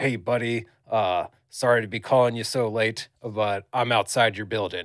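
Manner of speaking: rough, pushy, gravelly, aggressive growl. Retelling a phone call from an unknown caller, in a put-on gravelly, aggressive voice. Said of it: "this real gravelly voice, like aggressive voice".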